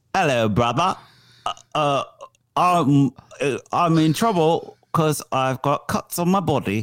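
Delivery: put-on, imitated British accent. Role-playing a phone call to a brother, in an imitated british accent. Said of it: "Could you do like an impression of picking up a call, British or whatever accent?".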